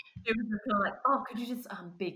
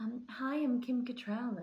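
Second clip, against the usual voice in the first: hushed, very slow, soft voice; 3 semitones higher, 5 dB quieter than usual. Describing an actress in real life: Kim Cattrall voice, softly spoken. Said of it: "really softly spoken, like, really quiet".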